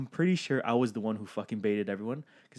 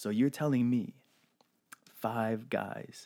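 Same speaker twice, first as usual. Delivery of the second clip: put-on condescending tone, quieter; 5 dB quieter than usual. Retelling what a man said about the trip: imitating a condescending man. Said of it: "this man, so condescending".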